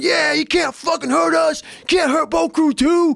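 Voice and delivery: very high-pitched, fired-up yell. Retelling the boat crew launching the boat: imitating a crew yelling.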